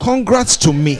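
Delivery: bold, proud, very loud, full chest voice. Coaching someone to congratulate themselves: bold, with your chest. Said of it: "say it with your chest".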